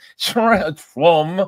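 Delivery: put-on French accent. Retelling a friend saying where he is going: imitating Adam's French voice. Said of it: "he's using his French voice".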